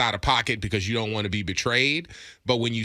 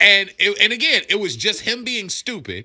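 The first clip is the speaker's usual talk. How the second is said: normal talking voice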